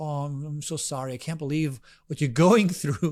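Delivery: mimicked, very slow way of talking. Speaker recounting a man consoling his friend, imitating his very slow talking. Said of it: "he has this very slow way of talking".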